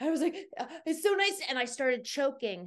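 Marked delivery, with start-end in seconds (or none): 0.6-1.4 put-on out-of-breath panting, higher pitch. Retelling running into an office out of breath: imitating being out of breath. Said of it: "huffing and puffing".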